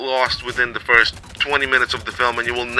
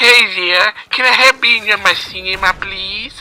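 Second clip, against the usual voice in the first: put-on squeaky, slow voice of a young teen; 9 semitones higher, 5 dB louder than usual. Explaining which applicants weren't cast, speaker imitates a squeaky young voice. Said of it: "squeaky, squeaky voice me".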